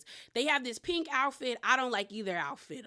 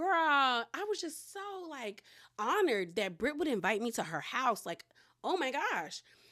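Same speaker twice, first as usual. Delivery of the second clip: heavily sarcastic, over-sweet, faux-honored gushing; 3 semitones higher than usual. Recapping a reality show, quoting a cast member's confessional, mock-sarcastic gushing. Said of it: "Portia's being um sarcastic in the confessionals".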